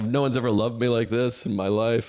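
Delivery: imitated crying, tearful voice. Retelling a partner's reaction to a gift: imitating someone crying. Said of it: "literally crying".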